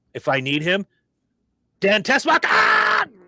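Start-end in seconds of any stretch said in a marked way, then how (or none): 1.8-3.0 yelled, very high pitched. Acting out calling a new hire over: yelling like Gene Hackman. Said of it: "I'm gonna yell like Gene fucking Hackman".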